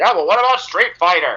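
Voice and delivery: acted-out yelling. Recounting a man shouting from the background during a recording, retelling a yell. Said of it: "He's just yelling".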